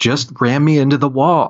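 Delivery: urgent, high-pitched, half-shouted delivery. Retelling a stunt where one actor yelled at the driver: imitating Jim yelling. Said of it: "yelling at him. He's like".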